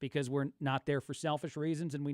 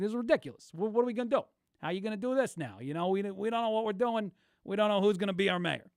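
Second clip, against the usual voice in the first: put-on, high-pitched New York accent; 6 semitones higher, 4 dB louder than usual. Imitating the guys from a New York, Long Island story, in a New York accent. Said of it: "I like the New York accent when the guys are like".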